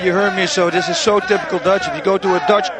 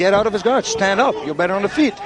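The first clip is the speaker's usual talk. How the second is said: plain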